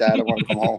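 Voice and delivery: put-on sobbing like a baby. Retelling a first phone call home after shipping out: imitating own past crying like a baby. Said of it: "I was crying like a baby saying".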